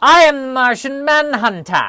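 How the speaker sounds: theatrical, high, slow, loud and drawn out. Joking about calling yourself Martian Manhunter: theatrical Martian Manhunter voice. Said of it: "a little bit of a theatricality ... you need to speak with that kind of voice".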